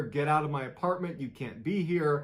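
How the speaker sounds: ordinary delivery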